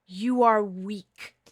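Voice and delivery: loud, growling dragon voice, molten-lava growl. Voicing a being who speaks to the listener in dreams, growling. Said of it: "she growls. Her voice is like molten lava".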